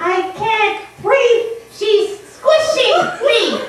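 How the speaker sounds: very high, squeaky ventriloquist puppet voice. A ventriloquist's puppet complains while being held too tightly; ventriloquist puppet voice. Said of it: "[name], / Yeah, just hold her a little looser so she can breathe. / Ribbons the Clown-Ventriloquist / Ribbons the Clown-Ventriloquist".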